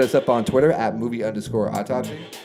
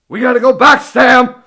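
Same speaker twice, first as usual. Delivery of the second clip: frantic scientist voice, much higher, louder; 13 semitones higher, 13 dB louder than usual. Keeping up a bit while the other speaker questions it, in a Doc Brown voice. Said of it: "you're just gonna keep doing the Doc Brown thing?".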